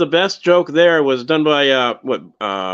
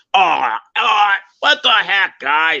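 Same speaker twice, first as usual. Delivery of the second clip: put-on high-pitched gravelly voice; 5 semitones higher than usual. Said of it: "his voice is kinda high, but it's gravelly".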